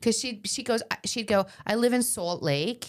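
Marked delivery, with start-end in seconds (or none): 1.6-2.9 slow, put-on New York accent. Describing a woman from Manhattan now in Salt Lake, the speaker imitates her New York accent. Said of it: "I have to do it in her accent".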